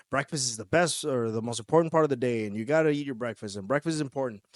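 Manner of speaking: plain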